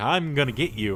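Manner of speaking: ordinary talk, nothing marked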